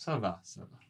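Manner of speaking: so-so, unenthusiastic, lukewarm tone. French lesson on saying ça va with attitude: so-so, unenthusiastic tone. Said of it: "Deux fois avec l'attitude, c'est pas super".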